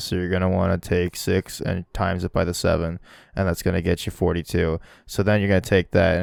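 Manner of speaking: very low, dead-level, flat monotone drone. Imitating the guy who does a math video: flat monotone delivery. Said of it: "he has this like super monotone, so he's like".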